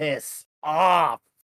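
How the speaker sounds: acid-dripping, venomous hissed voice. Playing a creature refusing to hand over the brush: hissing. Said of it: "I hiss with dripping acid out of my mouth saying".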